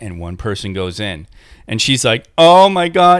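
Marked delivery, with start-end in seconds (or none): 2.4-3.2 high, loud outburst on the edge of tears. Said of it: "And she starts crying".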